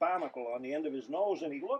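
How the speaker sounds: ordinary delivery, nothing marked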